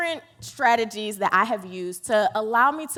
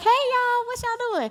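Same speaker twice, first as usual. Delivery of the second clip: put-on voice, very high-pitched. Recalling a first scrapped vlog, the speaker mimics the greeting in a put-on high-pitched voice. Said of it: "I was speaking this high-pitched voice like this".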